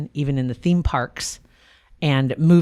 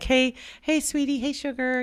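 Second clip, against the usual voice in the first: mock baby talk, higher, quieter; 10 semitones higher, 5 dB quieter than usual. Imagining how a married cartoon couple talk in private, mock baby talk. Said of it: "like baby talk almost".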